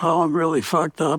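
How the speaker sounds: put-on moan. Retelling finding a roommate lying on the couch: imitating Leo moaning. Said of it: "he's moaning".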